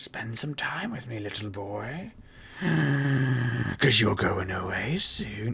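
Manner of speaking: very slow, drawn-out creepy wizard voice. Speaker acts out what a woman might say to him, in creepy wizard voice. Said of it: "She doesn't speak like a creepy wizard".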